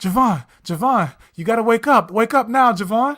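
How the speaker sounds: put-on hysterical pleading. Retelling how his girlfriend at the time woke him, imitating a hysterical plea. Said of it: "she was hysterical".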